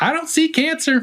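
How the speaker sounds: very high-pitched Southern twang. Retelling what a preacher said on stage, imitating his Southern twang. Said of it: "his Southern twang".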